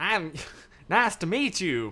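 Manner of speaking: put-on American accent. Speaker shows off how they do an American accent. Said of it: "This is my American accent".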